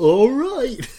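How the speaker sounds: high, very silly goofy cartoon dog voice. Telling the other speaker how they'll answer next time, in a Goofy voice. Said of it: "in my most goofy voice, Goofy from Disneyland".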